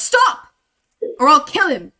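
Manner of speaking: loud shouted delivery with swinging, swooping pitch. Narrating a fight, a character with a blade at a captive's throat yells: yelling a threat. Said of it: "and yells".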